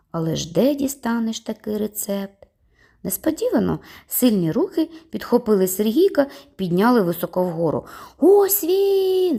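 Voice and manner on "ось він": ear-splitting, deafening, very high-pitched yell. Someone spots the boy as strong hands lift him high, deafeningly loud shout. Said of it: "закричав хтось оглушливо гучно".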